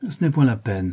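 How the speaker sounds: with a sigh. A man answering a woman at the counter, with a sigh. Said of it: "soupira Adrien Singleton".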